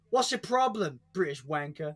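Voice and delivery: put-on American accent. Retelling what a friend always says to him: imitating Chuck, American accent. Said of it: "Like that".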